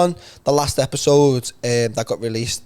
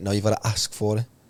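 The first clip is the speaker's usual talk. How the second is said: ordinary delivery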